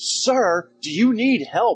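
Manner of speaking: loud mocking yell.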